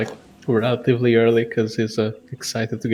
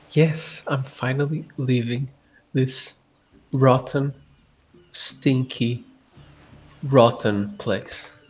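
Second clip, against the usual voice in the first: slow, cheerful, glad, happy delivery; 6 dB quieter than usual. Answering a companion who asks about excitement, in character: happy. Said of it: "I've ever heard you sound happy".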